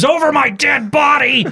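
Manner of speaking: put-on very high, stretched-out, drawn-out screech. Retelling how a man on the beach reacted: retelling a scream. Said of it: "And he screams".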